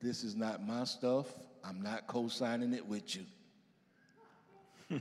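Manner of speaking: unruffled, steady, calm, slow and deliberate delivery. Retelling what she said at dinner: imitating her calm voice. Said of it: "she looked at me with that calm voice".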